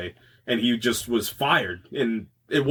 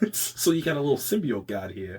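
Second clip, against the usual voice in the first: understated, soft, low-key mumbled character voice under breath; 5 dB quieter than usual. Imagining the symbiote god being explained to Eddie, improvise an Eddie Brock impression on the fly. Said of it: "That was my best Eddie Brock impression".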